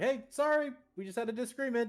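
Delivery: high, pleading call.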